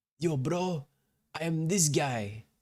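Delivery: put-on high-pitched dude-bro Russian accent. A player imitates the gecko boss from a video game, Russian bro accent. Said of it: "And he kind of talks like that".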